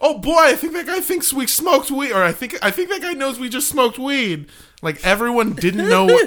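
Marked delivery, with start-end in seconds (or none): 0.0-4.5 put-on very loud, pitched-up remark. Retelling what they said after the man who patted them down left, very loudly. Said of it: "And I very loudly went".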